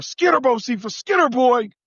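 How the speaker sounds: high-pitched calling out. Retelling calling out a truck window to the dog: retelling a yell. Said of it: "and I yell out the window".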